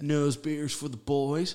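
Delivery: very loud, high, booming frat-bro bellow. Imagining a giant American at a frat party: imitating a giant frat guy. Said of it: "that giant person at, like, a frat party going".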